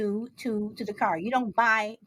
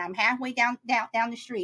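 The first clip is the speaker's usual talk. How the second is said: ordinary delivery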